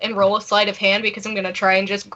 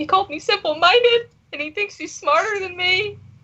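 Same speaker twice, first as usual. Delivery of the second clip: put-on weepy, very high fake sobbing; 10 semitones higher than usual. Playing a character who tells strangers about being insulted: fake crying. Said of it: "'cause I'm crying now, fake crying".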